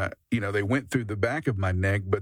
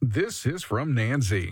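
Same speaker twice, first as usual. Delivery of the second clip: slow, on-air radio announcer voice; 3 semitones higher than usual. Starting to read a listener's message, nancy's: radio announcer voice. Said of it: "I'm getting my radio voice back".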